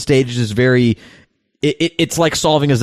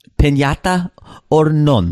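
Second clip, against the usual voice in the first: over-the-top, exaggerated Spanish accent on English; 3 semitones higher than usual.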